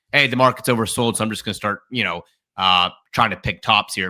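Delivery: ordinary delivery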